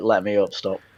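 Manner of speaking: put-on crying, tearful voice. Retelling a film scene where a tied-up boy pleads: imitating someone crying. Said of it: "he's there crying, saying".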